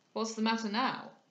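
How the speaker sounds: plain reading voice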